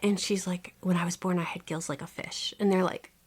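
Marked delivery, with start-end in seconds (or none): 0.8-2.5 soft, hushed, confiding, secretive whisper. Retelling what a woman said at auditions, whispering. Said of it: "That's what she whispers".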